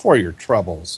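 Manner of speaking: heavy, laid-on, very sarcastic tone. Retelling dropping coins into a man's hand, re-enacted very sarcastic remark. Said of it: "in a very sarcastic voice say".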